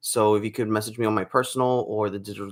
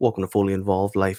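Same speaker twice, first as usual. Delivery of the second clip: put-on radio announcer broadcaster voice; 3 semitones lower than usual. Speaker introduces their channel in a put-on radio voice. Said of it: "let me put on my radio voice".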